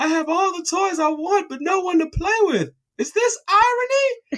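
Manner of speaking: put-on high, tearful, drawn-out little-kid crying whine. Retelling being a sad kid with all his toys but nobody to play with: imitating own past crying. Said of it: "I turned around crying like".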